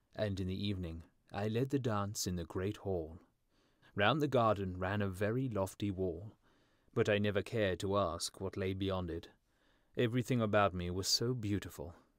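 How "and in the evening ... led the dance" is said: usual speaking voice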